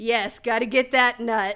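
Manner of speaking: mock loud speech bubbling out mid-laugh. Retelling a drive-thru customer's reply: imitating a customer laughing while talking. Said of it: "And he starts laughing".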